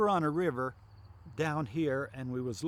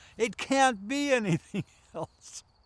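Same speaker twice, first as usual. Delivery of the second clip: deliberate, raised full voice, loud and drawn out; 8 semitones higher, 5 dB louder than usual. Retelling own words on seeing a creature, then retelling a raised voice. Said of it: "raised my voice".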